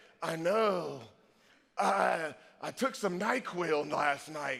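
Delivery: groggy, drowsy voice, low and slow. Retelling a phone call with their mother, who had taken NyQuil: imitating mother's groggy voice. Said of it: "and she said like this".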